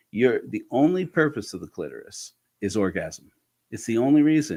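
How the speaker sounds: ordinary delivery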